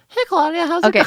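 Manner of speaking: put-on very high young boy voice. Showing what a prepubescent boy sounds like, prepubescent boy voice. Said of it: "what is prepubescent is like".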